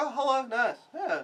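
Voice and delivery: high, cheery, unbothered, cheerful voice.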